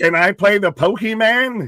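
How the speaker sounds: put-on loud, very high old-geezer voice. Teasing the co-host for sounding old, imitating an old person. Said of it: "You sounded old as shit saying it".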